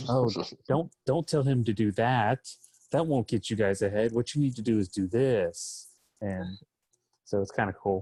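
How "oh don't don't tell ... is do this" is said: put-on dark, ominous, sinister voice. Describing a cool feature, the speaker acts out what the voice says: imitating dark ominous voice. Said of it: "dark side ominous voice saying like".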